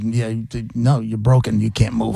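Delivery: ordinary talk, nothing marked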